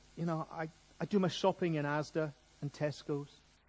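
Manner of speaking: murmured North of England voice.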